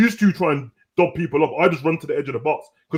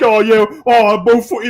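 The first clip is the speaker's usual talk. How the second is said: mocking put-on voice, higher and louder; 6 semitones higher, 8 dB louder than usual. Mocking a teammate's claim to be two-footed: mocking imitation of Cavs. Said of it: "Get Cavs like".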